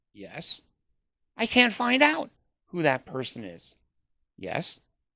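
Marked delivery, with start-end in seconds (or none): 1.4-3.8 high-pitched, protesting tone. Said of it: "I go".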